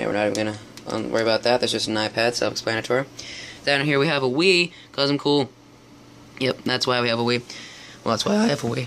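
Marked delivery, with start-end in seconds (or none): 8.0-8.9 voice cracking and breaking on the words. Pointing out items in the room to those watching, voice cracking. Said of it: "voice crack".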